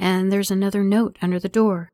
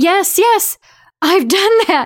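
loud, very high, excited outburst; 12 semitones higher, 7 dB louder than usual. Answering a man over the radio once she can finally hear him, blurting excitedly. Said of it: "Esther blurts excitedly".

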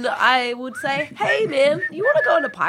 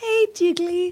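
gentle, coaxing call; 3 semitones higher than usual. Kneeling down to approach Jigalump while another character is aggressive, speaking real quietly. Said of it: "kneel down real quietly and be like".

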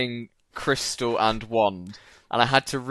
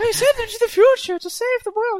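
very high, loud put-on voice; 5 dB louder than usual. Told not to, the speaker does a line anyway: doing the voice. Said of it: "I'm going to do the voice".

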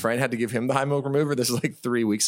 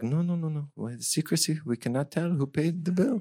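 put-on French accent, quieter; 3 semitones higher, 4 dB quieter than usual. Retelling what some people told the speaker, in a put-on French accent. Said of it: "How long are you working on this French accent".

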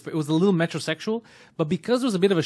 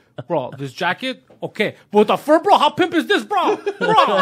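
mock yelling, higher and louder; 7 semitones higher, 6 dB louder than usual. Retelling a man trying on a jacket in a shop: imitating someone yelling. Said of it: "And he keeps yelling".

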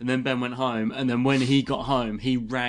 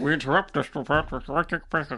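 fake cartoonish newscaster voice; 3 semitones higher than usual. A group reading a script aloud, voicing a news interruption like the guy from Yellow Submarine. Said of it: "I sound like the guy from the Yellow Submarine".

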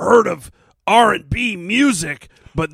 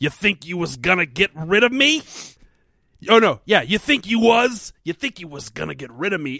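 put-on old New York gangster tough-guy voice. Retelling a new line a character keeps saying in an episode, in a Bowery boy gangster voice. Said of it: "He's a fucking Bowery boy".

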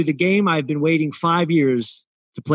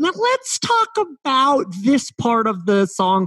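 slow, high-pitched put-on voice; 8 semitones higher than usual. Describing a man with a high voice, speaker does a high-pitched impression. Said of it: "he has this high-pitched voice. So he'll be like".

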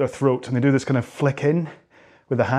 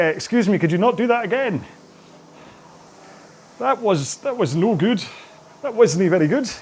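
Scottish accent, raised pitch; 7 semitones higher than usual. Voicing a complaining lower back after a deep layback: Scottish accent. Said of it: "Got a very Scottish lower back".

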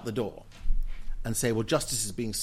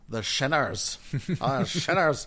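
put-on Northern Irish accent with raised pitch; 4 semitones higher than usual. Recalling the Reverend Ian Paisley's word for them, in an Ian Paisley impression. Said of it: "It's a very good accent".

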